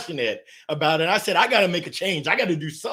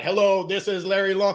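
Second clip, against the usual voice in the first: mechanical, scripted, flat robotic monotone voice; 3 semitones higher than usual. Retelling a scripted phone greeting called robot talk: imitating a robotic voice. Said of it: "You're talking like a robot".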